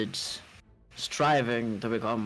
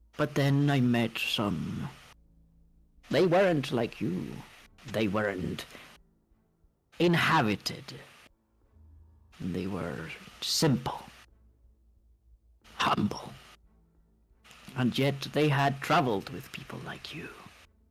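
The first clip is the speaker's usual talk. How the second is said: put-on old, monstrous, ancient alien creature voice; 2 semitones higher than usual. An ancient creature recalls meeting some beings it grudgingly respected, and tells a small visitor about them, in the voice of an ancient alien being. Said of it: "Its tentacles wriggle around. / And he points up into the sky. / alien smart ancient being? / Okay, I'm gonna go back to not rasping my voice all the time because it's gonna fucking kill me".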